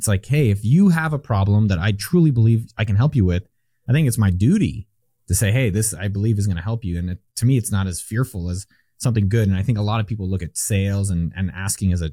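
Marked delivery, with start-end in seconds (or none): none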